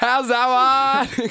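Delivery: put-on very high, loud shouted English accent, "that" drawn out. Imitating an Englishman appealing after a batsman's middle stump is knocked back, imitating an Englishman shouting. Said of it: "an Englishman shouting at you".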